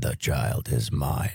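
put-on very low, slow, creepy demonic possessed-girl voice. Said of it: "a line from The Exorcist".

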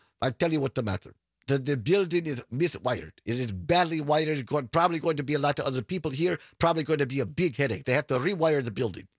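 bad, rough, approximate Ukrainian accent. Quoting the first Spectrum guy, a young Ukrainian immigrant, in a bad Ukrainian accent. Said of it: "I don't do a very good Ukrainian accent".

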